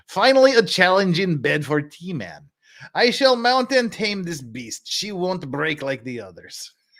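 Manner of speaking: put-on mixed Bulgarian and Midwest Texas accent. Saying a line the way Dragon's Treasure would: Dragon's Treasure put-on mixed accent. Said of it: "That's the best Bulgarian northeastern, northern, Midwest Texas accent I can pull".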